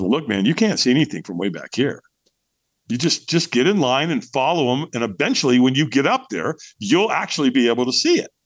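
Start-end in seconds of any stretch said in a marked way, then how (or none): none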